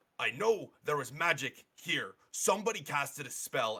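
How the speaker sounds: hard, high-pitched, loud yell. A Silent Fist guard interrogates everybody in the tavern, yelling at the bartender. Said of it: "as he's yelling at the bartender".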